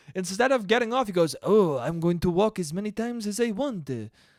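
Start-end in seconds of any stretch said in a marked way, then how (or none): 1.4-3.9 clumsy, bad put-on French accent. Retelling a Frenchman answering New York police, in a bad French accent. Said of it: "Every time I do a French accent".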